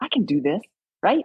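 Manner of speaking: plain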